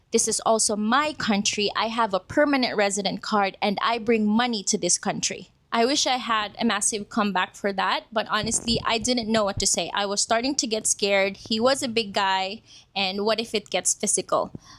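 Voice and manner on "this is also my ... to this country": ordinary delivery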